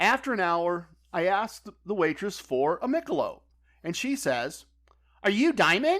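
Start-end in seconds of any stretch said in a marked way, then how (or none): 5.2-6.0 caricatured, mocking voice, pitched up. Retelling a casino waitress's question, mocking imitation of a waitress. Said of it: "I'm mocking her, but that's how she sounded".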